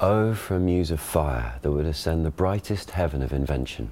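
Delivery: read in modern received pronunciation.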